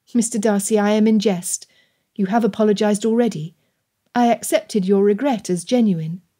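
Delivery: ordinary delivery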